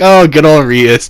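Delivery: plain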